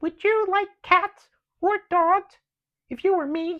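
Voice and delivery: very high, very loud, shrill, indignant mouse squeak. Narrator voicing the mouse's indignant reply; squeaky indignant mouse voice. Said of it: "squeaked the mouse indignantly".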